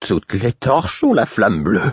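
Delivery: strangled, choked voice. Murfès looks into the corridor and exclaims in a strangled voice. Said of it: "d'une voix étranglée".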